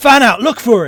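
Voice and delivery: very loud, high-pitched shouting. A game master voices searchers after the player character disappears, shouted orders. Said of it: "you hear the shouted exclaims like".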